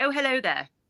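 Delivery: very posh accent. Showing how it sounds when someone speaks it: very posh accent. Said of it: "like very, very posh".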